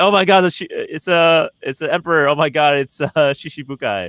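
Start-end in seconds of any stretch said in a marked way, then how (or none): none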